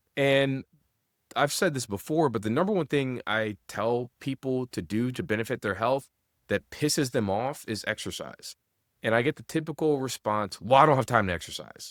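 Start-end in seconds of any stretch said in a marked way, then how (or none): 10.6-11.9 mock-irate tone, delivered faster. Quoting people's typical response to being told to exercise, imitating an irate tone. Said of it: "in a very like irate tone".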